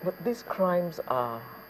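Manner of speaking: slow and quiet, easing in gradually. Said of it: "Just take it gradually".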